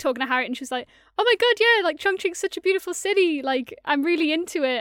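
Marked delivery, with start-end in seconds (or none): 1.2-4.8 high, loud, passionate, gushing weird voice. Retelling a first conversation with Harriet: imitating Harriet's voice. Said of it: "giving you a weird voice, Harriet".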